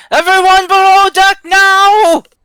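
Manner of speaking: high, stretched shouting. Voicing Lucian ordering everyone off a rocking ship: yelling an order. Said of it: "Lucian's just yelling".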